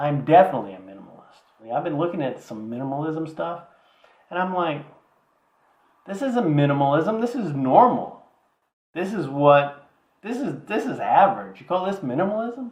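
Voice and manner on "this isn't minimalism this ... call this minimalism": worked-up, slightly angry, rising, excited outburst. Asked about minimalism, the speaker answers excited, voice rising. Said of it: "your voice goes up, gets a little angry".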